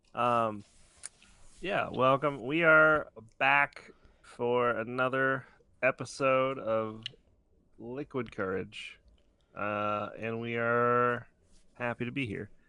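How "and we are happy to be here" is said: glum, unhappy-sounding tone. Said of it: "You don't sound happy".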